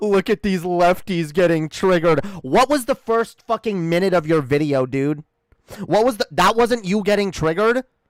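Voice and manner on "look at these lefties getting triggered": gloating, self-satisfied, mocking tone. Mocking how he starts his video: imitating a smug tone.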